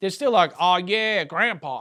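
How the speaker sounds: put-on Texas accent. Joking about people in Texas, mimicking them in a Texas accent. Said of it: "Texas accent".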